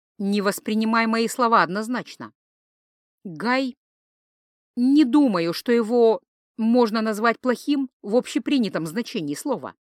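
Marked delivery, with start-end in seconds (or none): none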